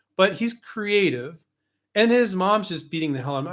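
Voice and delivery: ordinary talk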